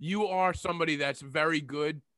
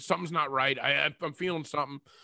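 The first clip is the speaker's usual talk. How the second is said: usual speaking voice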